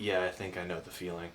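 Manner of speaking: soft, quiet mutter under the breath. Narrator voicing a character who nods and responds mostly to himself, quietly muttering under breath. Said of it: "quietly mutter under his breath".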